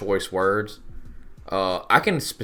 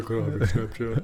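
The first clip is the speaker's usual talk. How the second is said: fast, put-on cartoon character voice. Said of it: "She sounds like Fat Albert".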